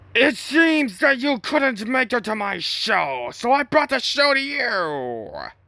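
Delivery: very high, ridiculous character voice, drawn-out "you". Doing a voice that hurts ears after warning about it: ridiculous Funtime Foxy voice. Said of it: "this ridiculous voice".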